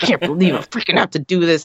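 mock cursing, muttered under the breath. Retelling how she reacted in the boat, imitating muttered cursing under her breath. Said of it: "she's just cursing it the whole time, like under her breath".

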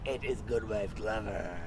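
low, slow, creepy, eerie demonic voice. Retelling what Martha supposedly said, quoting her in a creepy demonic voice. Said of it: "in a demonic voice, I said I wasn't going to speak in a creepy voice, but I will".

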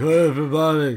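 belted out, very loud and high. Describing a theme park ride: bad Vin Diesel impression. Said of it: "That's my bad Vin Diesel impression".

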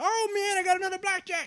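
mock very loud, high-pitched, shrill, boastful announcer-style voice. Retelling calling out a win at the blackjack table: imitating saying it loudly. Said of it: "you say it real loud".

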